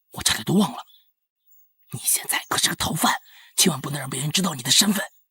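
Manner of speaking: soft, whispered hush, kept quiet. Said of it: "小声点嘛".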